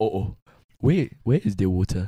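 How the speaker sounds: put-on Nigerian accent. Doing a bit about two guys looking for water, put-on nigerian accent. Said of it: "Do two Nigerian guys looking for water".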